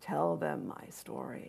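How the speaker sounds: soft, slow, unhurried gravelly voice. Retelling a story where Thomas answers a question: Thomas's gravelly voice. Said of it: "in his gravelly voice".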